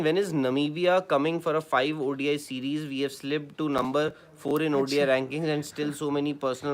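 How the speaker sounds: usual speaking voice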